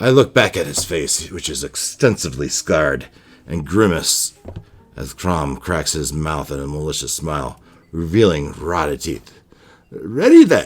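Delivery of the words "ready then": shrill, very high, loud, booming taunting jeer. Narrating a solo game, voicing a scarred man's line, mocking Crom voice. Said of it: "he says, mockingly".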